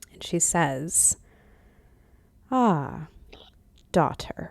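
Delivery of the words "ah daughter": silky, smooth, velvety voice. Narrator voices a woman greeting her daughter, in a velvety voice. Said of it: "you hear the velvety voice".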